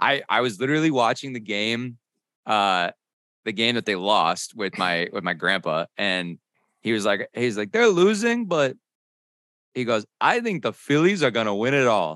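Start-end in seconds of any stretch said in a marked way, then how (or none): 10.2-12.2 put-on thick Greek accent, higher, faster. Retelling grandpa's prediction during the game, in a thick Greek accent. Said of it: "in his thick Greek accent".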